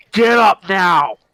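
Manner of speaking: booming, very loud, thundering yell. Seeing the group's reaction, the character yells at a companion in a booming voice. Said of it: "I go ahead and yell in a booming voice".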